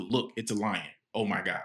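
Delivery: plain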